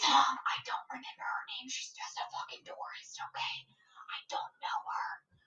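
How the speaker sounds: very quiet, hushed whisper-yell. In a scene, a character talks about a woman right nearby, whisper-yelling. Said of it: "Whisper yelling".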